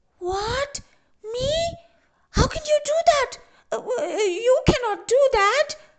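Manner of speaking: very high squawking protest, long drawn-out "you". Narrator reads Tembe answering Mamba's threat to eat her, squawking. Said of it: "Squawked Tembe".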